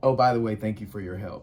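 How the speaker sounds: ordinary talk, nothing marked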